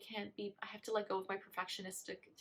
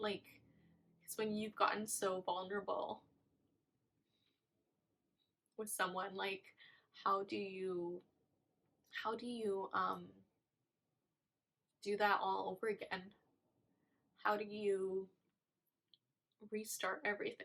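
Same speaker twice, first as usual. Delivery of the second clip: speaking through tears. Speaker opening up to listeners about starting over, crying. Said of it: "I'm sorry, I'm crying".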